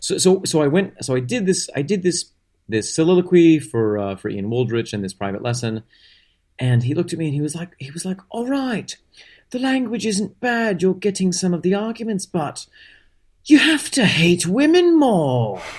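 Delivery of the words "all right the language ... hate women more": put-on British accent, pitched very high. Retelling what the teacher said after a private-lesson soliloquy, imitating Ian Waldrich, British accent. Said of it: "I only have one British accent".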